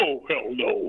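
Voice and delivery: put-on deep male voice. Retelling how Tony answered an invitation to go ghost hunting, in Tony's real deep voice. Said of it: "he's got a real deep voice".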